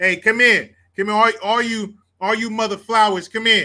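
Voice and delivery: loud, high-pitched hollering, calling out. Retelling what a Navy petty officer always said: imitating Petty Officer Lugo. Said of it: "Puerto Rican dude from New York".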